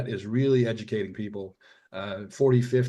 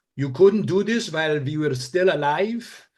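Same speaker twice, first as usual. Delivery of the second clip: mock Hungarian accent, higher, louder; 7 semitones higher, 8 dB louder than usual. Quoting mom's reaction to finishing the book, imitating guilt-tripping hungarian accent. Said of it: "since we're doing their accent".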